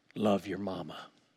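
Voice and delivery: commanding, stern, prophetic preacher tone. Retelling father's words at his bedside: imitating father's Marine voice, preacher prophetic tone. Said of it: "with that Marine voice, with that preacher prophetic tone".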